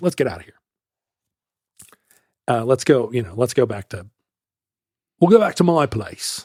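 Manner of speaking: put-on accent from Seattle. Retelling what your buddy leaned over and said, in a Seattle accent. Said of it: "he said in his S- Seattle accent".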